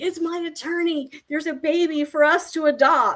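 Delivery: play-acted, high, bursting, erupting joy. Retelling what a woman said after a phone call in a pharmacy: retelling bursting joy. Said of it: "but she just erupted in joy".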